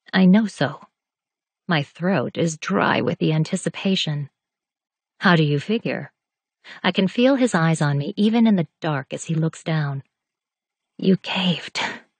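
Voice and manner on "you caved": harsh, rough whisper. In the dark, the narrator answers him in a harsh whisper. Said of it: "My voice is a harsh whisper".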